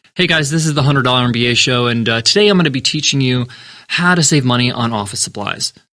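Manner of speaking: dull, flat, low, energy-free monotone. Showing what opening the show without energy sounds like, flat low-energy delivery. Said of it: "imagine I started the show sounding like this".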